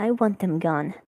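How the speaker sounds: soft, hushed murmur, words kept close. Asked what they would like done, a character answers in a low murmur. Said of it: "Volpus's voice goes a bit low as they murmur".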